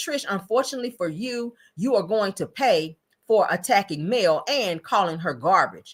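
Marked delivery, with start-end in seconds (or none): none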